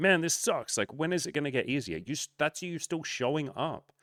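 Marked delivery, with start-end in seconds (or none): 0.0-2.0 fed-up, angry, annoyed griping. Imitating a viewer's angry comment: imitating a pissed-off commenter. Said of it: "where you're pissed off and you're like".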